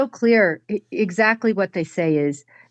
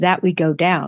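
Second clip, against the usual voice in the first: mock quiet delivery, very soft and lower; 3 semitones lower than usual. Breaking down a woman's exact words, the speaker repeats her second phrase: repeating her words very quietly. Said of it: "And then very quietly she says".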